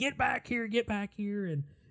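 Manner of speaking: high, screamed crying yell. Telling a story about a man chasing a kid, imitating a screaming chaser. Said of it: "the dude starts chasing and screaming".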